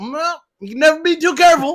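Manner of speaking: put-on Southern accent, very high and loud. Playing a car salesman answering a customer: put-on southern accent. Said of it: "I just put on a Southern accent the whole time".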